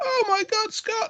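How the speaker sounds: mock, very high, all-upset outburst. Retelling how Louise reacts to the bloody cloth, imitating someone getting upset. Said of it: "she gets all upset".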